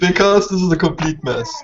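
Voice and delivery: loud, words broken up by laughter. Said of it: "Why are you laughing?".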